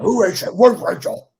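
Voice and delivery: very loud, slow, drawn-out barked bellow.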